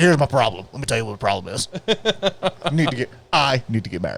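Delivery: ghoulish ghost character voice. Retelling a movie scene, imitating Beetlejuice. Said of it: "He's like".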